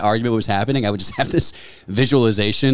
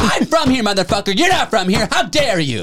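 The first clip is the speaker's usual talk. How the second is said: put-on blackout-drunk hollering, high-pitched; 12 semitones higher than usual. Retelling what a blackout-drunk man yelled over a wristband, retelling a drunk scream. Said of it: "blackout drunk, screaming at the top of his lungs".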